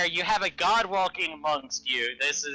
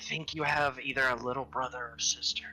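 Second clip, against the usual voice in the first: low, hushed stage whisper; 5 semitones lower, 6 dB quieter than usual. Player's character going over to another character, in a quiet half-whisper. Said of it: "quietly whisper".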